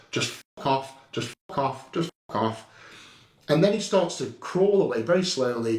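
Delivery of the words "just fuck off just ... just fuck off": ordinary talk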